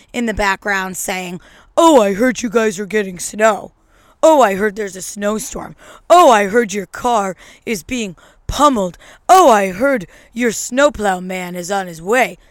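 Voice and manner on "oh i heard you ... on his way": put-on loud, snide, sarcastic needling tone. Mimic people who post remarks with palm trees during a snowstorm, imitating someone snarky and sarcastic. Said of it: "some snarky, sarcastic remark".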